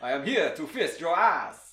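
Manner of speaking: put-on horror-movie vampire voice. Joking about a vampire movie, vampire voice. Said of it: "That's my vampire voice".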